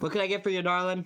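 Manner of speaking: loud, high barmaid voice calling out. Voicing the busy lady behind the counter greeting a customer, tavern lady voice. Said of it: "the lady behind the counter, and just say".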